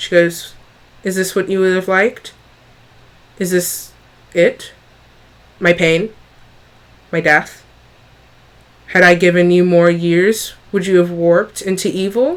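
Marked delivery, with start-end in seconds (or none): 1.0-12.4 voice bent out of shape, distorted and warped. Narrating a scene, voicing a struck woman addressing the player: distorted voice. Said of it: "her voice is sort of distorted".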